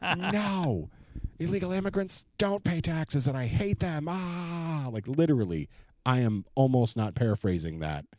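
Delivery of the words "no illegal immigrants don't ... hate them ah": very high, furious, drawn-out screaming rage. Retelling angry online replies to cited news sources: imitating screaming rage. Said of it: "you would just get screaming rage".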